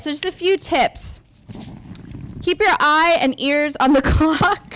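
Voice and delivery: speech broken by bursts of laughter. Moderator giving tips to the panel, laughing while talking. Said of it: "I'm like laughing".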